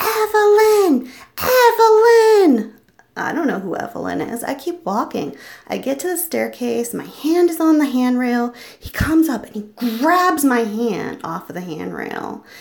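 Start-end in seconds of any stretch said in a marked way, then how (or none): 0.0-2.7 high, loud, slow, furious scream. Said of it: "He's screaming".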